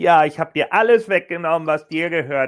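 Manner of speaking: deliberately grating fake voice. Retelling what someone said in a recap, in a deliberately annoying put-on voice. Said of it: "ich spreche jetzt auch bewusst immer so mit dieser Stimme".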